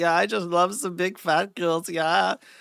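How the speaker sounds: joke, comical fake German accent, put on. Describing a show character's voice to chat, in a comical German accent. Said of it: "comical German accent where he's like".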